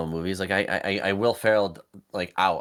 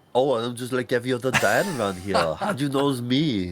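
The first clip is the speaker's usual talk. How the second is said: put-on silly Austrian accent, pitched up; 5 semitones higher than usual. Mocking the dad's silly accent, doing an Arnold Austrian accent impression. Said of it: "an Austrian accent".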